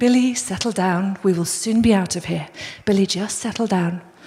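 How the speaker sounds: very calm, gentle, unruffled, soothing voice. Retelling a dad calming his screaming son billy in a store, imitating a very calm dad. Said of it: "this man was just really calmly saying".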